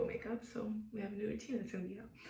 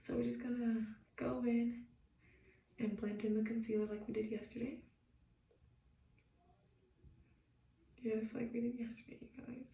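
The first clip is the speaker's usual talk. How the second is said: soft, quiet whisper. Filming a makeup video, staying quiet enough for mom, soft whisper. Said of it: "I'm whispering a little bit".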